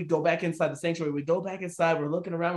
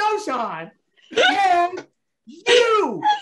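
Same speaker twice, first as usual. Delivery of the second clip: yell, higher and louder; 12 semitones higher, 7 dB louder than usual. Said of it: "I like that he's yelling at you".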